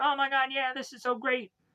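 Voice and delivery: mock, very high, all-excited chattering voice. Retelling a show scene where Aisha is chosen captain: acting out Aisha's excitement. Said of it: "Aisha is going on being all excited".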